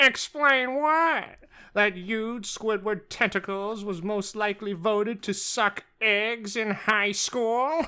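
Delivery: put-on cartoon squid rival character voice. Asked to do it again, doing a Squilliam voice. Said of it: "your Squilliam impression".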